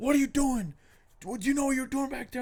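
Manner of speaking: mock very high-pitched screaming. Retelling a traffic stop where the cop yells at the driver: imitating a cop screaming. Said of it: "He's screaming at me".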